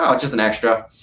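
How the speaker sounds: normal talking voice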